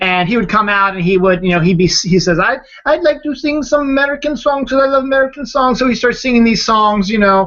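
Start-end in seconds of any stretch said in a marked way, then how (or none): 2.4-5.8 high-pitched put-on foreign man voice. Retelling a comedian's act, imitating Andy Kaufman's foreign man voice. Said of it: "in the foreign voice".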